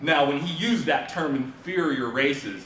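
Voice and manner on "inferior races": slow, sarcastic delivery. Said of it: "you could hear the sarcasm in his voice".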